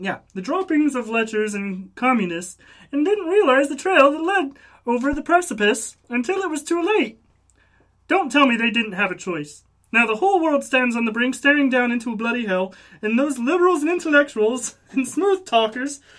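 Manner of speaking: cartoon puppet frog character voice. Speaker reads a passage aloud, doing a Kermit the Frog voice. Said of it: "read in Kermit's voice".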